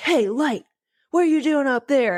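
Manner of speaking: high, put-on, half-cross, kind-of-angry call. Retelling a class exercise of yelling at a distant light, mock-angry yell. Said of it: "kind of angry".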